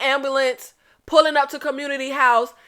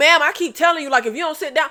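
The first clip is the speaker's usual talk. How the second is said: ordinary talk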